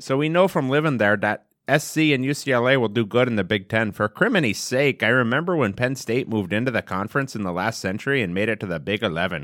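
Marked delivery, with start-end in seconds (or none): 3.9-5.0 put-on Minnesota accent, pitched up, on for criminy's sake. Joking about Big Ten conference teams, in a put-on Minnesota accent. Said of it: "I was trying to do Minnesota".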